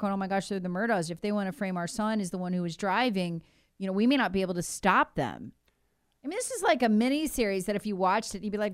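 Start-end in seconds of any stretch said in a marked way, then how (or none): none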